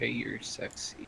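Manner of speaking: very soft, barely audible whisper. Joking about what another player did to the enemy: whispering. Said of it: "You just whisper at him like".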